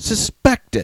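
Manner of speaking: word suspected strongly stressed. Discussing a news item on gun control, hitting the key word: stress on 'suspected'. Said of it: "I'm I'm hitting the key word there".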